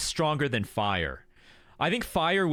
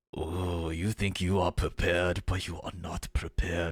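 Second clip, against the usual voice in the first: very deep, low, imposing, intimidating, sage-like wise voice; 9 semitones lower, 3 dB quieter than usual. Suggesting how a show character should speak instead, intimidating, wise voice. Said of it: "wouldn't he seem more intimidating and wise if he was like".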